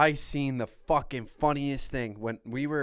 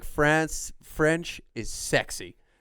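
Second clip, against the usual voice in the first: ordinary talk, nothing marked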